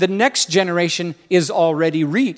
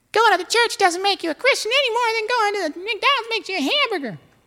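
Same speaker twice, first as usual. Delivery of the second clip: very high-pitched, preachy preacher voice. Retelling what a preacher said to everyone, imitating Keith's high-pitched voice. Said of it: "he said it with his high pitched thing".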